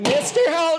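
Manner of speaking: shouting. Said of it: "Why are you yelling at me?".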